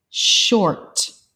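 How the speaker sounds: quick reading, sounds of short run together. Showing learners how to read the word fast: reading the word fast. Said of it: "then read them fast".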